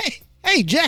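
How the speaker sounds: very high, half-managed attempt at a voice. Naming a favorite comedian, trying a Richard Pryor voice. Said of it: "I can't do his voice".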